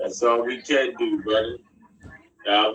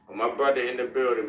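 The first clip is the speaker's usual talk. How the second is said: plain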